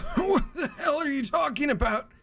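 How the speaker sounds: very high, strained, pain-wracked dying voice. Game narrator voicing a dying man who spits blood, voice strained with pain. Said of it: "Like he is physically in pain".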